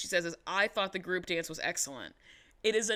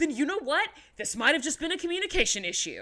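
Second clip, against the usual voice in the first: high, all-out scream at full volume; 8 semitones higher, 3 dB louder than usual. Retelling an argument where one mother yells at another: imitating Jeanette yelling at full volume. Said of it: "full volume yelling".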